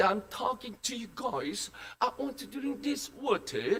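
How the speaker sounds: fake British English accent. Playing a British person in a story about English speakers, in a British English accent. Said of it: "This is a British English".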